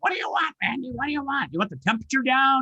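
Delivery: very high-pitched, shrill yelling. Retelling how the kitchen speaker answered: imitating Alexa yelling. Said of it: "was yelling at me like".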